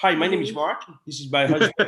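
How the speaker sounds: put-on, acted Dutch accent. Getting into character, the speaker introduces himself in a Dutch accent. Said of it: "You have to say it in a Dutch accent".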